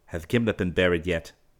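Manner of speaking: ordinary delivery, nothing marked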